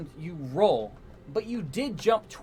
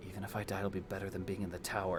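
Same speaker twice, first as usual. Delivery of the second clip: soft, very low half-whisper; 12 semitones lower, 12 dB quieter than usual. Game master voicing Nisa just before she jumps off the tower, in a half-whisper. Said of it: "She just whispers".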